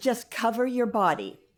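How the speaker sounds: normal talking voice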